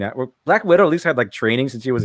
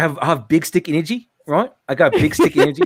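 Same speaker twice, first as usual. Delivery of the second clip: fake British accent with Australian mixed in; 3 semitones higher than usual. Teased about the accent, the speaker shows off a put-on British accent. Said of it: "That's British, right?".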